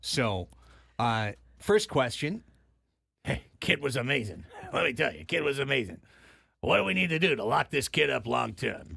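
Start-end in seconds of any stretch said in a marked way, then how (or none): 3.2-9.0 rough, creaky, gravelly put-on voice. Imitating a front office guy asking how to lock up the kid: put-on gravelly voice. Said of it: "the guy with the gravelly voice".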